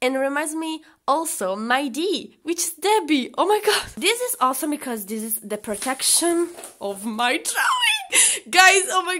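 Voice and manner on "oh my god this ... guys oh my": thrilled, gushing, very excited, high and swooping. Opening a package on camera for viewers: very excited. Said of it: "I'm so freaking excited".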